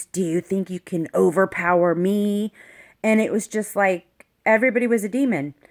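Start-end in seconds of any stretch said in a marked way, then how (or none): 0.1-2.5 menacing, sinister, evil-sounding voice. Retelling what the cop who restrained the speaker said, in a mock-evil voice. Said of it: "he said to me in a real evil voice".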